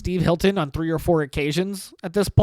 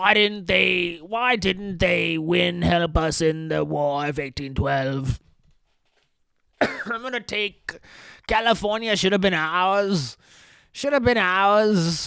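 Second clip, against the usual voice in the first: put-on Cockney accent. Mocking a British politician running for governor: put-on Cockney accent as Steve Hilton. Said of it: "fucking hurts my voice to do this fucking Cockney bullshit".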